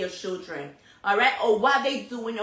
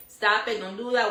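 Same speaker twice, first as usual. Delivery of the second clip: usual speaking voice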